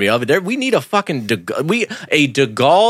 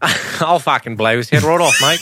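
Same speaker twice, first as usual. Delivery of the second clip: put-on Australian character accent. Voicing a character the speaker calls Australian, Australian accent. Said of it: "He's Australian".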